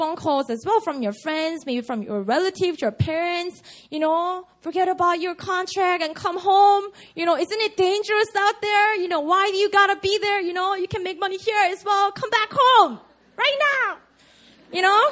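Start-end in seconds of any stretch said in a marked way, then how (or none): 4.6-15.1 high, fussing, nagging Korean mother voice. Describing calls from worried family back home, the speaker does a Korean mom voice. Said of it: "That's a Korean mom voice".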